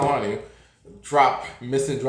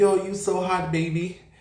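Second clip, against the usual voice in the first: pitched-up flirty voice; 5 semitones higher than usual. Retelling what a shirtless guy said on the street: imitating the twink's voice. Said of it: "He sounded just like that".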